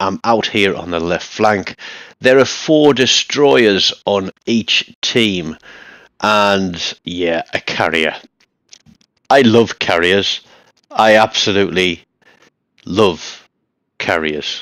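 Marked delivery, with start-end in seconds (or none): 9.3-14.6 fake enthusiasm, plainly sarcastic and insincere. Commentating a match with destroyers and carriers: sarcastic, not sincere. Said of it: "I think you can get from the tone of voice there that I absolutely hate carriers".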